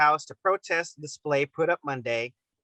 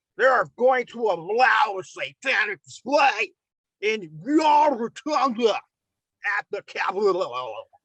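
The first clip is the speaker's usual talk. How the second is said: muffled put-on voice, mouth full, higher pitch; 4 semitones higher than usual. Reading a senator's quote aloud: Darren Bailey impression, mouth-full sound. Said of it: "Why do you sound like you have a cock in your mouth?".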